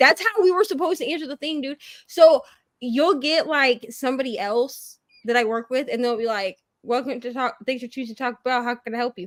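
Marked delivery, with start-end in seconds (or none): 6.8-9.3 put-on bored, listless, flat, rattled-off delivery. Describing how a coworker greets Taco Bell customers on the speaker, imitating a bored coworker. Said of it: "how cheery I sound".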